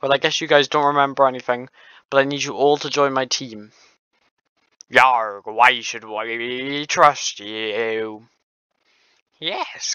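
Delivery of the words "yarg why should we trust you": slow pirate voice with drawn-out "we". Voicing Foxy asking why they should trust him: Foxy pirate voice. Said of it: "good question, Foxy".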